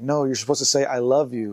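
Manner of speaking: ordinary talk, nothing marked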